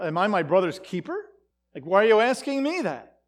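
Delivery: heavy, dripping sarcasm, nothing sincere. Explaining a scripture line, acting out Cain's reply: sarcastic Cain. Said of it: "he's saying that very sarcastically".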